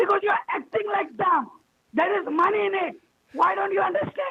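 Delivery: heated, angry, scolding tone. On a call, answering someone who says they are shouting, angry shouting. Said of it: "You're shouting".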